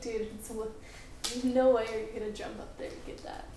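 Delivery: ordinary talk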